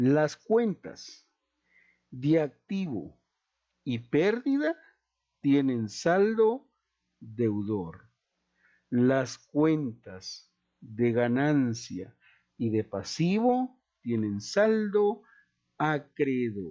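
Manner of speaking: slow, deliberate dictating voice. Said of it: "lo voy a decir despacito".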